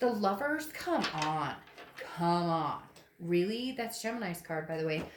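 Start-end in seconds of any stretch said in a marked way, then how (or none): 0.0-3.7 sarcastic, slow, drawn-out, mocking disbelief. Reading cards for a viewer, the speaker mocks them in a put-on voice: mocking voice. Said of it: "I'm saying it like that in that voice is because I'm mocking".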